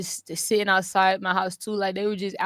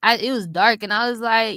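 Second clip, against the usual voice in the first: normal talking voice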